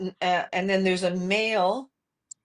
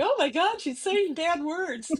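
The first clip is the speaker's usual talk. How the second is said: mock teenage voice, higher pitch; 9 semitones higher than usual. Imagining a fourteen-year-old reacting on TikTok: imitating a fourteen-year-old. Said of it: "some fourteen-year-old on here going".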